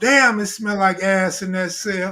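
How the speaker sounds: ordinary talk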